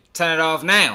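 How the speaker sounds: bossy, sassy, acted out. Retelling her order to turn the game off: imitating a sassy command. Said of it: "she was real sassy when she told him to turn the game off".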